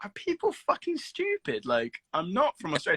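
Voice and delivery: fed-up, exasperated, swooping rant. Retelling how mum reacted to being called Australian: imitating annoyed mum. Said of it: "she got so pissed off with people saying".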